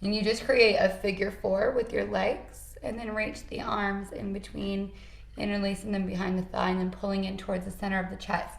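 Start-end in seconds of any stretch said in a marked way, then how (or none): 5.4-8.5 rattled off really fast. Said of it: "If I said that really fast".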